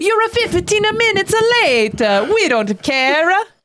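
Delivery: vague put-on Italian accent. Speaker imitates how people in Italy react to lateness: vague attempt at Italian accent. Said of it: "I don't know what that accent was".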